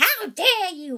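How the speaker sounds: very high, shrill, loud storybook witch voice. Showing how the witch in a posted storybook is voiced: storybook witch voice. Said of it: "the witch in that book, I talk like".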